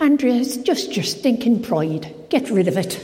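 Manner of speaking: put-on straight-talking Irish accent. Retelling what her closest friend Mabel told her, Mabel's Irish accent. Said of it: "in her lovely Irish accent".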